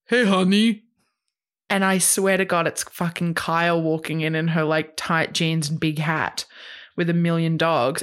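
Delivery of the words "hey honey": higher, louder cheery voice. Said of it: "he goes".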